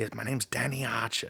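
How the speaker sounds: put-on accent close to a New Zealand one. Giving a reference for a South African accent: Leonardo DiCaprio Blood Diamond accent. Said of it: "Leonardo DiCaprio in Blood Diamond, 'cause he's like".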